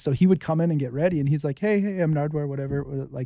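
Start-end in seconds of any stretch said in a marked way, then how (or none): 1.6-2.5 completely flat, expressionless monotone. Retelling how Nardwuar greeted them before his radio show: imitating Nardwuar speaking monotone. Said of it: "just kinda keeping it pretty monotone".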